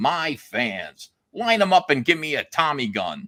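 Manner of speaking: slow, drawn-out, grand voice, plainly fuming. Retelling what Stan Lee said about his fans: imitating Stan Lee's great voice. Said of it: "he said it in his great voice".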